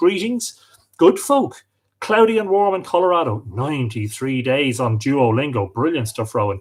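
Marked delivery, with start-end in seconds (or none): none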